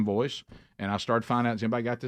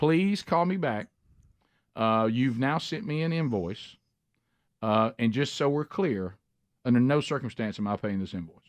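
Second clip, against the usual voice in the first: ordinary talk, nothing marked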